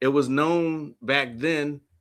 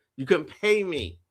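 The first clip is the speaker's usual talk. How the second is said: ordinary talk, nothing marked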